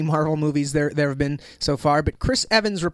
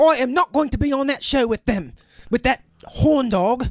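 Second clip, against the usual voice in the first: high-pitched fake British accent. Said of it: "but I'll just do British".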